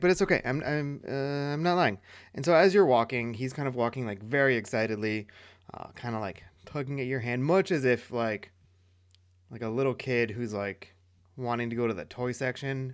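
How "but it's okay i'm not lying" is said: small, slow, whimpering reply. Narrator voicing a threatened character answering the listener's threat, whimpering. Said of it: "He kind of just like whimpers".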